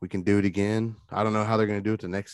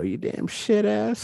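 mocking put-on mother voice, higher pitch; 13 semitones higher than usual. Retelling how a friend mocked his mom's words: mocking imitation of a mom. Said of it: "he'd mock her, like, what she said".

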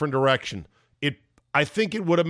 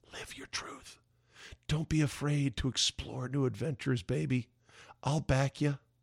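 soft, hushed, seductive new age Hollywood woman whisper. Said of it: "whispering in his ear".

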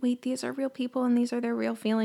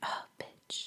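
muttered under the breath, much quieter. Retelling what a woman in the bathroom said about her: muttering under her breath. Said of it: "muffles under her breath".

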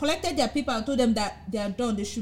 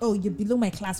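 ordinary talk

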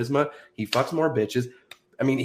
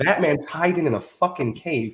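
ordinary talk, nothing marked

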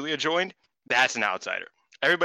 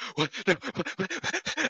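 shocked sobbing, higher and quieter; 9 semitones higher, 4 dB quieter than usual. Retelling watching a wrestler's surprise return, imitating own past crying in shock. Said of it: "I legitimately start crying".

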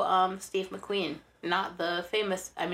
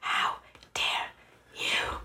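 put-on angry, seething whisper. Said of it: "you should whisper it like that".

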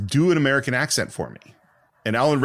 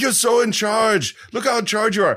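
gushing, excited, very high-pitched delight; 11 semitones higher than usual. Retelling how an excited Arnold Schwarzenegger reacted while watching: imitating excited Arnold Schwarzenegger. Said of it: "that's exactly how excited he is".

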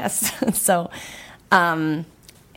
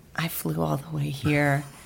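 put-on very quiet speech; 4 dB quieter than usual. Retelling how a man answered after being told she can't meet, speaking real quiet. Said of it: "he was real quiet".

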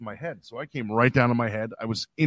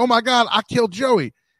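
mock shrieking, high-pitched scream full of alarm; 11 semitones higher, 4 dB louder than usual. Retelling how an opponent got up after beating him, retelling the scream. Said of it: "He screamed".

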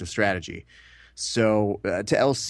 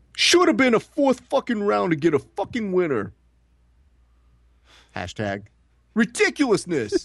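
very high, bouncing, swooping, animated voice; 12 semitones higher than usual.

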